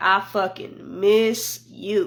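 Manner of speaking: emphatic, strongly stressed, leaning hard on the words. Retelling what a caller said: imitating emphatic "I miss you". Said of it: "he put, like, emphasis on it".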